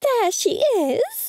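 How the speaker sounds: piercing, very high-pitched, shrill voice. Narrator reads Mum speaking as the narrator walks into the kitchen, in a shrill voice. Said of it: "Mum said in her shrill voice".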